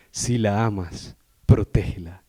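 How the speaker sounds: very slow, drawn-out radio announcer voice. Recalling a famous slogan from school days: announcer voice. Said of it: "así con voz de locutor".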